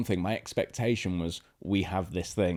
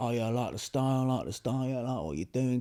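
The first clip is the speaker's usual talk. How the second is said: put-on cheeky, high-pitched London Cockney geezer accent; 5 semitones higher than usual. Retelling the boss's words on a phone call, London Cockney geezer accent. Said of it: "London Cockney geezer".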